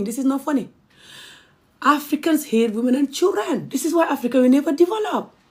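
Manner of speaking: high voice, crying and laughing at once. Describing being attacked for campaigning against FGM in Gambia, crying and laughing. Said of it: "I'm crying and I'm laughing".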